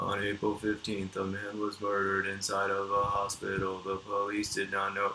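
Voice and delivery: slow, dead flat monotone reading. Describing a video narrator's style, speaker does a Chills monotone impression. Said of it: "he reads like the most monotone way possible".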